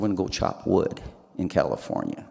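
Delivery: put-on quiet, broken Sicilian accent. Retelling the father's words on coming to get the speaker: broken Sicilian accent. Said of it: "with his broken Sicilian accent".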